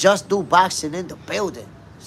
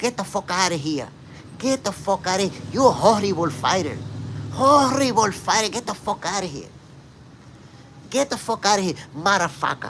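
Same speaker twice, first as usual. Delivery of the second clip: furious, angry tirade full of fury; 3 semitones higher than usual. Retelling how Canelo reacted when a fighter called him out, do your best Canelo impersonation, going off. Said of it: "That's my best Canelo impersonation right there".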